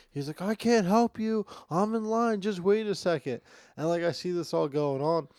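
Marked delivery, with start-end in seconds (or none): 0.4-3.4 impatient, high-pitched yelling. Retelling a man screaming across at a crying, struggling girl; retelling a scream. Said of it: "he's like screaming from like across the thing".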